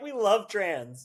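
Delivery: put-on high, loud, drunken cheering yell. Retelling what a supportive drunk guy screamed during a comedy set: imitating a drunk man screaming. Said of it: "so drunk and he just screamed".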